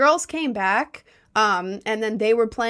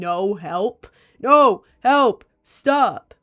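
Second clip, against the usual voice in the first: mock scream, loud, slow, drawn-out and rising; 2 semitones lower, 5 dB louder than usual. Retelling two guys attacking her: imitating her own screaming. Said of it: "weak girl who's screaming".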